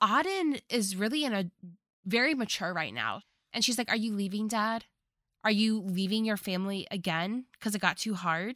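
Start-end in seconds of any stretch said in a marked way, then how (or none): none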